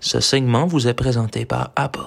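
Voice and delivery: honeyed, sugary sponsor-read announcer voice. A podcast host fakes a sponsor message as an example ad, honeyed ad voice. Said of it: "On vous ferait une petite voix mielleuse".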